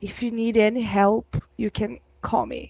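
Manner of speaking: confiding, hushed stage whisper. Half-whispering to a character's mother in a role-play scene: half-whispering in character. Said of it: "I'll whisper".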